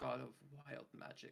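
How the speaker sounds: husky, hoarse, hushed half-whisper. A character pointing at symbols, half-whispering to Fyodor in a hoarse half-whisper. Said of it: "I kind of whis- hoarsely whisper to Fyodor".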